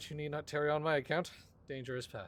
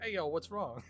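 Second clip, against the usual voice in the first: put-on Zoomer slang voice, higher; 3 semitones higher than usual. Joking that a character spoke like a Zoomer: Zoomer slang voice. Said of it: "spoke like a Zoomer instead".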